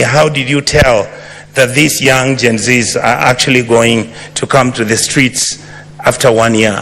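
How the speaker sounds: plain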